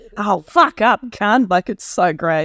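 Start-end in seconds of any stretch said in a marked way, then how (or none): 0.2-1.5 imitated Australian accent. Quoting a favourite tv character's catchphrase: imitating a tv character's accent. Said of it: "That's the way she talks is so funny".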